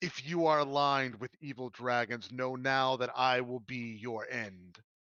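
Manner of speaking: grand, proclaiming voice like a towering giant. Game master voicing a character addressing the party, in a booming voice. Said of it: "in this in this booming voice".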